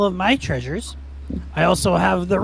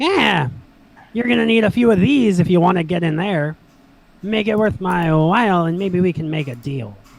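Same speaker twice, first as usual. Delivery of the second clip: grating, nasal, annoying voice; 4 dB louder than usual. Narrating a scene, the speaker voices someone calling out at the entrance: nasally, annoying voice. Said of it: "kind of like nasally, annoyingly".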